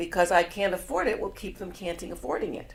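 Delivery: ordinary talk, nothing marked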